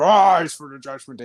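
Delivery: huge, deep, loud booming call. Imitating a wrestler's entrance line: Damian Priest big deep voice. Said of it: "He's got that big, deep voice".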